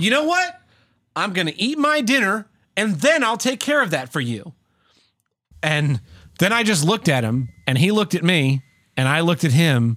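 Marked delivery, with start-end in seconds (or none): 0.0-4.5 high, barely held-back voice on the edge of yelling. Retelling a reply to a coworker, imitating being close to yelling. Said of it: "very close to yelling, but not quite there".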